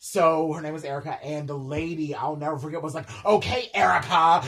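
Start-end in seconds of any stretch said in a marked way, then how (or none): 3.3-4.5 very loud, full-volume shout. Retelling a lady threatening to call Erica's manager, imitating someone yelling. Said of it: "You're literally yelling over soda".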